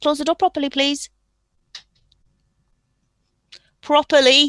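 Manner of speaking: Durham accent, northern English sound. While recording, a parent tells their daughter to close the door, like a northern mam. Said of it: "you sounded just like a northern mam there".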